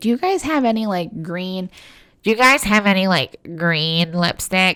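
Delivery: put-on cartoon voice. Retelling a prank call to a makeup shop, in a Squidward voice. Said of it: "this Squidward voice on".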